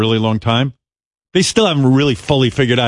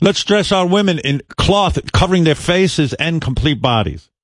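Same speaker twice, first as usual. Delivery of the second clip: put-on Iranian accent, pitched up; 5 semitones higher than usual. Speaker acting out a comedy bit, in a fake Iranian accent. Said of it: "Great Iranian accent".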